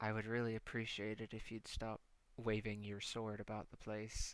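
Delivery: level, toneless, polite, deadpan delivery. Voicing a character in a scene: said kinda flatly. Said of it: "he says kinda flatly".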